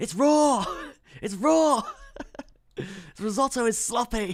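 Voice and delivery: very high, loud, slow, drawn-out yell. Reading chat on a trading stream, quoting Gordon Ramsay: Gordon Ramsay impression. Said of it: "I'm imagining you quoting Gordon Ramsay".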